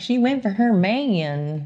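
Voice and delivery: exaggerated put-on Southern drawl, very slow. Joking about how a commenter might say the line: put-on Southern accent. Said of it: "what if she's really Southern and she's like".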